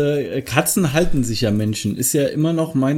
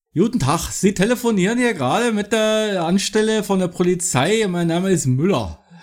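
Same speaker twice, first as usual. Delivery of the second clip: Berlin dialect speech, pitched up; 5 semitones higher than usual. Playing a police officer answering the phone, asked to do it in Berlin dialect. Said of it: "kannst du es in Berlinerisch?".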